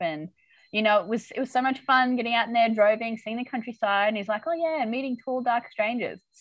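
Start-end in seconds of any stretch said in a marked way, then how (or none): 4.5-6.2 quieter passive-aggressive delivery. Retelling a character's reply to a thank-you: imitating Nick, passive-aggressive. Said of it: "So passive aggressive, Nick".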